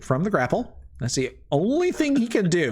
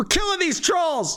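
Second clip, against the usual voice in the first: shrill, very high, furious shouted yell. Voicing an NPC who yells at his group in his turn: angry NPC yelling at troops. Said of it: "so this guy says in his turn, he's like".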